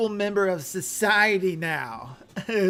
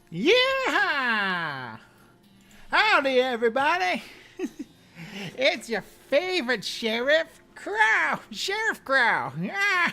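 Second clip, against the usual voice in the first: higher pitch with "yeah" stretched out long; 6 semitones higher than usual. A streamer greets chat in character as Sheriff Crow, Sheriff Crow voice. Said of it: "what voice was that?".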